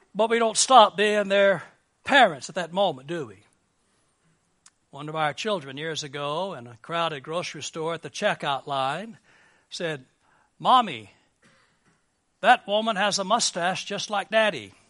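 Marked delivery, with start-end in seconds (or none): none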